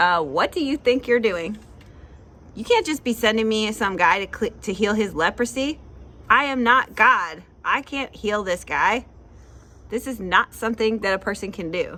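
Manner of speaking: usual speaking voice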